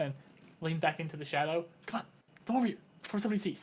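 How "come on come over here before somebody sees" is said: sneaky, furtive, secretive beckoning tone. Voicing a hidden figure in a trench coat beckoning Fog: furtive, secretive. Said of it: "shiftily, as if, like, trying to hide".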